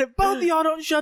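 loud shout. Retelling standing up and telling two people to shut up, retelling a loud yell. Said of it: "I said it loud as fuck".

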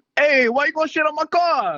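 put-on very high, loud, old-school Italian accent. Asked by the group to let them hear it, the speaker delivers a line in an old-school Italian accent. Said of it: "David has that real old school Italian accent".

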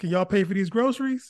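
wry, mocking, sarcastic quip. Retelling a joke to a couple in a checkout line: retelling own sarcastic remark. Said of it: "I said sarcastically".

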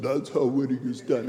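weak attempt at dropped, deep action-hero voice. Quoting a boxing film line, attempting a Sylvester Stallone impression. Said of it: "I wish I could do a good Sylvester Stallone".

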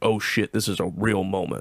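ordinary talk

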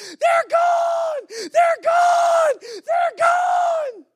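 very high, very loud, drawn-out top-of-lungs shriek. Retelling a girl's outburst while another girl shares her story: imitating a girl screaming. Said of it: "a girl screams at the top of her lungs".

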